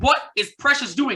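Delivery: mock loud yelling at full force. Retelling watching a game downstairs with family, reenacting yelling at the TV. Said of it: "I'm yelling full full force at the T V".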